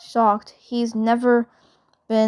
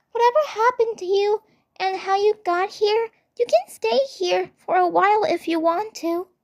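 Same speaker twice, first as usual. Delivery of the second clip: sweet, gentle, pitched-up voice; 10 semitones higher than usual. Narrating a story, the reader voices Bubbles speaking to Zim: sweet Bubbles voice. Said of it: "[name] looks at him with sweet worry, / nodding innocently before hugging [name], massaging his shoulders fondly with a cute expression. / [name] looks at him with sweet worry, / [name] looks at him w".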